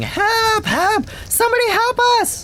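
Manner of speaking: loud screaming. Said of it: "is screaming".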